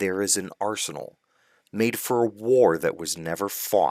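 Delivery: ordinary delivery, nothing marked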